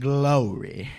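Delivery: "glory" drawn out slowly in a Southern accent. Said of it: "especially in the South".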